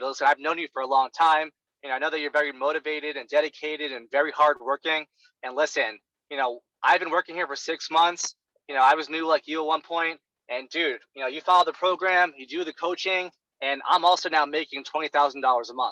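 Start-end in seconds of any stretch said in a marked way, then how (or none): none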